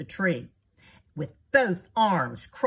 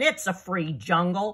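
plain

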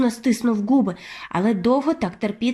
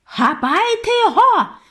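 screeching, shrill, very high-pitched shout; 11 semitones higher, 4 dB louder than usual. Reading a story aloud, voicing the head witch ordering the other witches, shouting. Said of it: "кричала верховна відьма".

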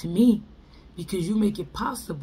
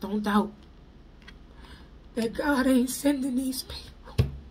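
emotional voice, welling up, pitched higher; 6 semitones higher than usual. Speaker addressing listeners about an emergency out here, getting emotional. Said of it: "I'm getting emotional".

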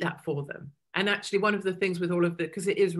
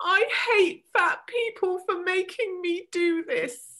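very high-pitched sobbing, crying wail; 13 semitones higher than usual. Speaker recalls crying on the couch at home; retelling crying on the couch. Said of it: "I'm crying on my".

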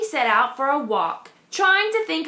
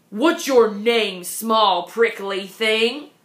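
unkind, mean-spirited tone; 4 semitones lower than usual. The rhinoceros questions the small prickly animal, unkindly. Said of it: "Asked the rhinoceros unkindly".

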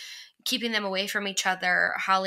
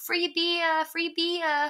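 high, drawn-out put-on Brooklyn accent; 10 semitones higher than usual. Recapping a scene, quoting a character's line in her Brooklyn accent. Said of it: "I love her little, like, Brooklyn accent".

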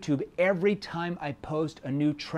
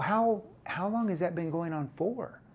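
genuinely interested, curious, inquisitive tone; 2 semitones higher, 6 dB quieter than usual. Sales tip on how prospects read your questions, curious tone. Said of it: "See, that's a curious tone".

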